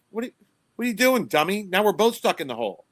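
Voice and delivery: high, incredulous, exasperated tone.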